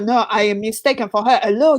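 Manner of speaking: put-on French accent. Retelling a planned reply to a stranger in a cafe: put-on french accent. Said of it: "kind of have a French accent and go".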